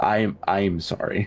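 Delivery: said very softly, quiet soft voice. Voicing a character quietly apologizing in a game scene: said very softly. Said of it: "he's gonna say it very softly right now".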